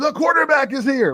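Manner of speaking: screaming wrestling announcer voice. Retelling the moment the music hit: Michael Cole screaming. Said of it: "here come Michael Cole screaming".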